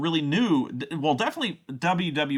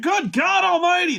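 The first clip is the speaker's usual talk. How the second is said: wild, very high, excited scream; 6 dB louder than usual. Retelling a commentator's famous call: Jim Ross screaming. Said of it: "He had that way about him of just screaming".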